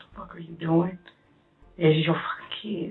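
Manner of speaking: play-acted, tearful, on the edge of crying. Retelling words said to oneself while in between crying: retelling own half-crying words. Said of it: "I was in between, like, crying".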